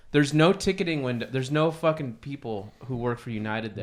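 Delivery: ordinary delivery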